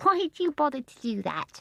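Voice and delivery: gentle, laughing voice. Narrator reading a character's question, in a soft, amused voice. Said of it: "in her soft, amused voice that seemed always to be full of laughter".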